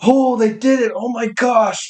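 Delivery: put-on excited exclamation, high and drawn out. Retelling watching the characters jump off the prison: retelling own excited reaction. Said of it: "I was like".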